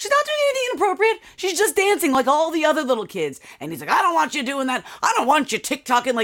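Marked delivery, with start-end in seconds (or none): 3.9-6.1 put-on cranky, grumpy, curmudgeonly old-man scolding voice. Complaining about a man scolding a young girl, imitating an angry curmudgeonly old man. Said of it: "he's like an angry old curmudgeonly old man".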